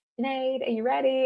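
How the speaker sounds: suppressed excitement. Retelling how the girl called her name, imitating held-back excitement. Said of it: "you could hear she was holding back the excitement".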